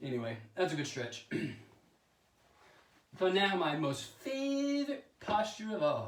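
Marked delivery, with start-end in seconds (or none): 3.2-6.1 slow, high, sarcastic tone. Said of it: "I'm being sarcastic".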